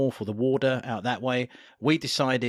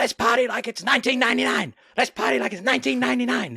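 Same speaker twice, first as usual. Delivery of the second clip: put-on man's screaming, much higher pitch; 12 semitones higher, 5 dB louder than usual. Recalling a man on a packed bus yelling one phrase over and over, imitating him screaming. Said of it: "there was a man who just kept on screaming".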